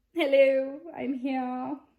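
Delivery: loud, fake, put-on princess accent. Coming back on camera as the positivity princess to say hi: put-on accent. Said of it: "I don't know why I pull out that accent".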